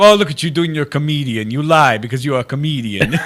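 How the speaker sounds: put-on heavy Italian accent with broken English. A comedian imitates his Italian immigrant grandmother's broken English. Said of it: "broken English because she's Italian".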